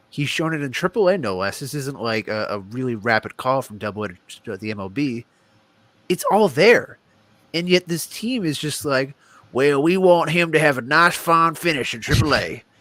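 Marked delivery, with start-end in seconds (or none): 9.6-12.6 put-on drawn-out Southern American accent. Mocking a team's plans for a player, doing a Buck Showalter impression. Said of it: "that was my Buck Showalter impression".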